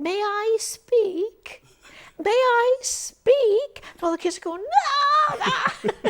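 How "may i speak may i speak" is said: put-on tiny, shrill child's voice, drawn out. Retelling a voice from one of the boxes calling over the kids, little shrill voice. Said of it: "a little shrill voice saying".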